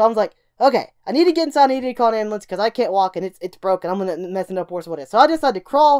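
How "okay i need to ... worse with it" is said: ordinary talk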